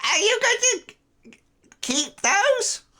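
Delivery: put-on very high-pitched, toothless old hag voice. Storyteller voicing a character to the players, toothless hag voice. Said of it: "toothless hag of a woman".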